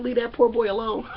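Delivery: ordinary talk, nothing marked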